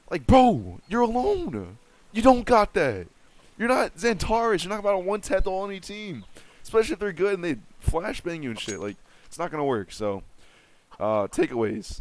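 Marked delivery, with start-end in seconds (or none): 9.9-12.0 voice crack, much slower pace. Coaching players and moving on to the takeaways, voice cracking. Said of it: "Excuse the voice crack".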